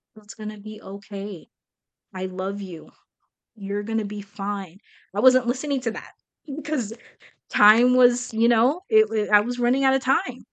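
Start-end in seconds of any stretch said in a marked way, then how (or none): 0.2-4.8 imitated soft, very quiet little voice. Retelling what the quiet inner voice said: imitating a very quiet voice. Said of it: "the very, very quiet little voice was like".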